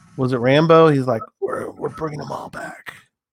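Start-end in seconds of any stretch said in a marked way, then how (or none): 1.4-3.0 bad, breathy action-hero voice. Quoting what Rambo says about bringing them all back, in a Rambo voice. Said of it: "That's my bad Rambo, by the way".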